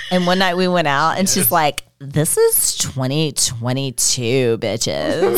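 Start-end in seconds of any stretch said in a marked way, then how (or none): 2.0-5.4 put-on valley girl voice, much slower, lower. The speaker recalls what a friend said on a night out, imitating Ashton's valley girl voice. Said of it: "She's kind of valley girl".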